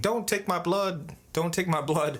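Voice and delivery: put-on scared little kid voice, high, frantic screaming. Retelling lying on the bed as a gas mask came over, re-enacting own screaming. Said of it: "and I was screaming".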